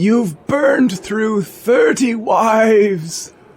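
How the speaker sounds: put-on high, mysterious old man voice, "wives" stretched out. A mysterious old man from the future speaks: high-voiced old man. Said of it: "mysterious, high-voiced old man, comes from the future ... high-voiced old man".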